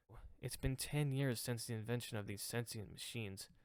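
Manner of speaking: plain reading voice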